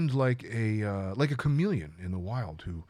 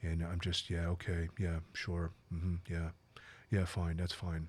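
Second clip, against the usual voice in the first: very quiet, hushed, expressionless flat monotone; 5 semitones lower, 9 dB quieter than usual. Describing the freeze response, speaker acts out a frozen person: very monotone voice. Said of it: "very monotone voice".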